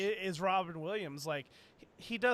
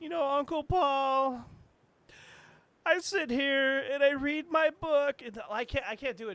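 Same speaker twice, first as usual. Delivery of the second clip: mock whining near tears, raised, one word stretched out; 6 semitones higher, 6 dB louder than usual. Showing the other speaker how to do Mankind talking to Uncle Paul, in a whiny crying Mankind voice. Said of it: "It just sounds like I'm whining or crying".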